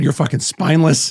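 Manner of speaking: plain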